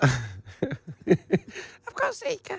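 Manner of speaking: high, very slow squeaky voice. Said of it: "It's the small head makes his voice high".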